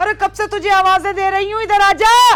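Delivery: shouting. Calling someone who has not come despite repeated calls: shouting. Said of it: "क्यों चिल्ला रही हो बुआ?".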